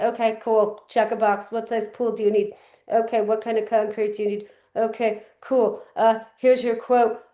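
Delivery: routine, transactional, businesslike sales delivery. Coaching on pool consultations, showing how not to sound: transactional tone. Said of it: "don't sound transactional. Like, to them, this is a big deal. If you sound like".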